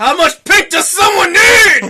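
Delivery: loud, high, slow exasperated shout. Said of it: "I'm like".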